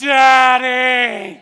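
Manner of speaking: mock shrill, very high, loud, drawn-out sobbing wail. Retelling his daughter's reaction when her banana broke: imitating a sobbing daughter. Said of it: "tears flowing, snot pouring".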